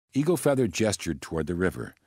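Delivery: ordinary delivery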